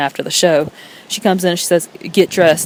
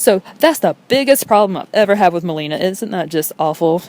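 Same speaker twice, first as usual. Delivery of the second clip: dry voice with sarcasm laid on throughout; 2 semitones higher than usual. Summing up a minor run-in as the biggest problem: sarcastic. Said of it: "I hope you can hear the sarcasm in my voice".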